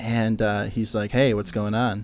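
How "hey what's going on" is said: put-on seductive voice. Retelling a phone call from the event coordinator: imitating a seductive voice. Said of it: "did he say it that seductively".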